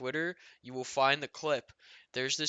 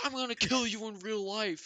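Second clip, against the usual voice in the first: put-on high, furious scream; 8 semitones higher than usual. Retelling how a player threatened another player: imitating someone screaming. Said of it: "sitting there screaming at other people".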